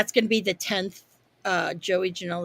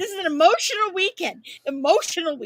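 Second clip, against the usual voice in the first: very high, weepy, tearful blubbering; 11 semitones higher than usual. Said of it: "I'm all, like, crying".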